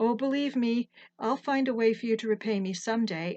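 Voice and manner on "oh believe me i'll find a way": plain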